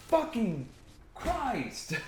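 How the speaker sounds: quick, sudden, high-pitched angry outburst. Complaining that viewers confuse the channel with another: getting mad. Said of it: "sorry to get mad there for a second".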